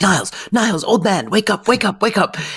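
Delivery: acted-out frantic, very high calling. Retelling a scene of frantic knocking on a door: imitating someone frantically calling. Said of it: "frantically knocking on Niles's door".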